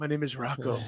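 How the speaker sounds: somewhat wheezy put-on child voice. Joking about a football player named Rocco: wheezy put-on Rocco voice. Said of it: "that was just kinda wheezy".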